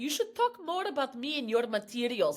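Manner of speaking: put-on very foreign-sounding voice with strong foreign accent. Quoting dad's wish to be in the act: imitating dad's foreign accent. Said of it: "my dad was, like, super foreign sounding".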